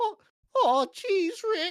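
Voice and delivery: very high, loud, slow stammer. Doing a Morty impression after being asked to: Morty impression. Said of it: "do your Morty impression".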